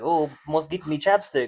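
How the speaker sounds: put-on voice of a tiny leprechaun. Joking that a tiny creature steals chapstick: leprechaun voice. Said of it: "little leprechaun in my pocket that's like".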